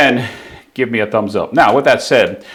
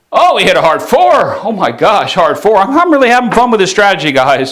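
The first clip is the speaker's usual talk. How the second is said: genuinely thrilled, excited, with swooping pitch; 9 semitones higher, 5 dB louder than usual. Narrating a dice table strategy to viewers, the speaker is excited. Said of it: "you hear my excitement in my voice".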